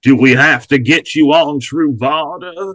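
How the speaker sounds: put-on American Southern accent. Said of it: "Uma Thurman as the Southern president".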